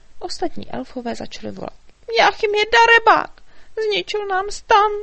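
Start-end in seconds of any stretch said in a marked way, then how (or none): 2.1-4.9 very high, very loud, shrill wailing lament. The elves, back at their wrecked tent, call out together; wailing loudly. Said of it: "Naříkali tak nahlas".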